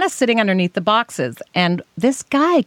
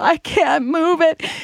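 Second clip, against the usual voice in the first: mock, very drawn-out, high, tearful speech; 7 semitones higher than usual. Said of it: "And I start crying".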